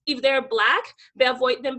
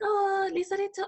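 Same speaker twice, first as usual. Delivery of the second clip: very quiet, soft, much higher; 8 semitones higher, 4 dB quieter than usual. Retelling how the boss called out to the speaker, said very quietly. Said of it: "she said very quietly".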